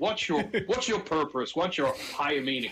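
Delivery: put-on American accent. Interviewer puts a question to the guest in an American accent. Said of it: "I don't know why I'm doing it with an American accent".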